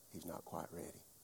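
very quiet, breathy, barely voiced confidential whisper. Retelling what he told mama behind a cupped hand: imitating someone whispering. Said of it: "kind of whispering tone with his hand cup".

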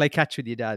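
ordinary talk

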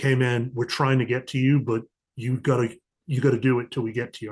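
serious voice. Retelling how a caller's voice changed: imitating Kevin's serious voice. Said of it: "the change in his voice from busting my balls to".

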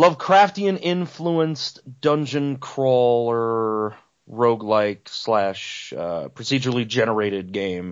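slow, deliberate salesy pitch delivery. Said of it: "That sounds like the worst Kickstarter pitch".

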